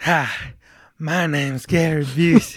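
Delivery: loud, very slow delivery. Introducing the show in a bad Gary Busey impression. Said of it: "That was bad".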